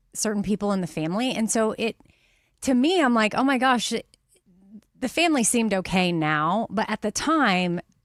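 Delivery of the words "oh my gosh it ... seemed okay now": usual speaking voice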